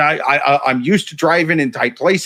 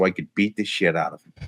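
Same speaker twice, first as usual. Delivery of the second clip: ordinary delivery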